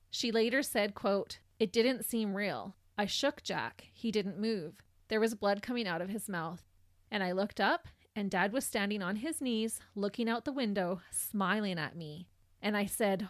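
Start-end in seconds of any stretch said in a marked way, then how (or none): none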